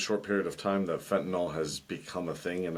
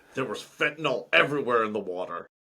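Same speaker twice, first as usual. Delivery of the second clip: pitched-up, podium-style announcer delivery; 5 semitones higher, 3 dB louder than usual. Imitating Trump speaking on the news: Trump impression. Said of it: "He goes like this".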